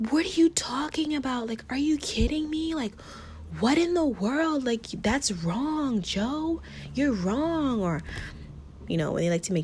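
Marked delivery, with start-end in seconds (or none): 0.1-7.8 mock high-pitched, argumentative yelling. Describing reacting while watching a podcast's videos, acting out yelling at phone. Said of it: "yelling at my phone".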